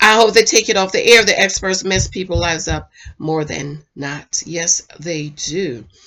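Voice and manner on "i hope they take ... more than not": usual speaking voice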